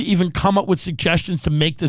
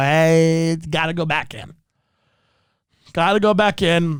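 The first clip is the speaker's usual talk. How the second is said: slow, insistent, demanding, no-argument tone. Retelling how mother sent the pizza back: imitating mother sending pizza back. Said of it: "she'd go".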